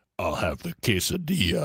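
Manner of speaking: as deep a voice as possible. Demonstrate how you will go around all weekend talking, in the deepest possible voice. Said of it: "in the deepest possible voice I can".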